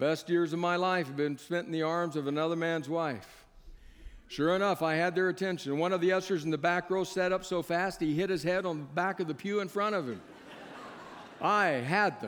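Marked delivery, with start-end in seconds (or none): none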